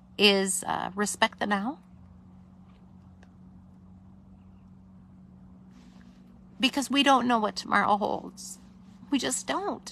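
tearful voice. Host of Sunday Night Live shares the night's theme with viewers, crying. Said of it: "forgive me for crying".

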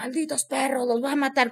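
put-on hoarse, raspy male voice. Retelling a frightening night, voicing a contorting woman in a hoarse man's voice. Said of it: "con una voz de hombre ronca".

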